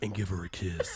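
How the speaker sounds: low, seductive late-night radio DJ voice. Imitating a radio host talking to lovers: imitating a sexy radio dj voice. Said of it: "sounding all sexy for the people on the radio".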